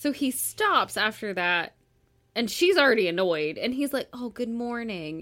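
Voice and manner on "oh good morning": mock suggestive, sexy, seductive tone. Retelling a man greeting an already annoyed woman, in a mock sexy tone. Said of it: "in like a sexy tone".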